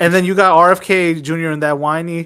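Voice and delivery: ordinary talk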